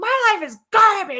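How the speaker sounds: furious yelling, very high and loud. Recounting yelling at the sky and lake beside a companion: retelling an angry yell. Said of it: "And I'm yelling".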